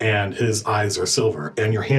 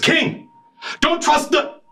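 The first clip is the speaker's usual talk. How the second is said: very high, gasped-out words, cut short. His eyes back to normal, the character gasps out a warning, gasping warning. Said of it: "he gasps and looks at King and says".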